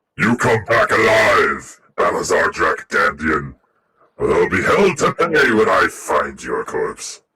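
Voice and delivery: said very loudly, at full volume. A saluting character sends off a departing crewmate, very loud. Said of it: "very loudly".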